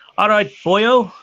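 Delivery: fake accent slipping a bit into English. Someone offers a phrase for others to try, put-on accent going a bit English. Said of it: "The boyo went a bit English, eh?".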